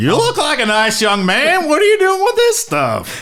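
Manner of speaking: very high lawman voice with pitch swinging around. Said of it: "in the, uh, the voice of Barney Fife".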